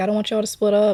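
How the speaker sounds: mock, high-pitched pleading through tears. Retelling begging a parent during their fights: retelling a crying plea. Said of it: "And I'd be, like, crying".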